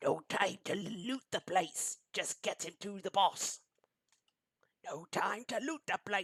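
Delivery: high, scratchy, rasping creature voice. Narrating a Kekku that jumps onto a box and speaks, in a scratchy creature voice. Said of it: "this one is going to say in a scratchy voice".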